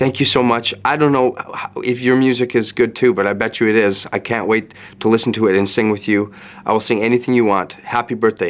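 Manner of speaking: ordinary talk, nothing marked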